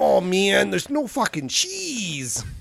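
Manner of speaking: put-on gangster voice, Latin American accent, swooping pitch.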